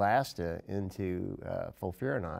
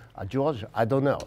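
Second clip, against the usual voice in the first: loud, high, put-on French accent; 5 semitones higher, 7 dB louder than usual. Retelling what the regimen's originator said on a bus: Dave Gramont's voice in French accent. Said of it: "that's my best French accent".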